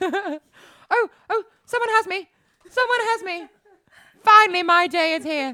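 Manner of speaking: Edwardian-era style voice. Imagining him finally plucked from the shelf, speaking in an Edwardian voice. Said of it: "they speak like an Edwardian voice?".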